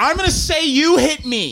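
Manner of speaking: mock argumentative, arguing voice. Retelling a recorded argument, quoting her threat: imitating someone arguing. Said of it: "recordings of her and Johnny Depp arguing".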